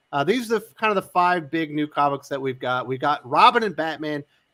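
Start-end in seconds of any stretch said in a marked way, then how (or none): 2.8-4.2 firm, leaning stress on the word Robin. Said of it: "Emphasis on the Robin".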